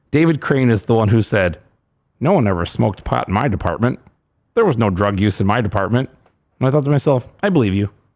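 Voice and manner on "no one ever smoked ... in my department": in-character voice, low, dropped. Quoting what David Crane said, in a David Crane impression. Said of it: "Good impression".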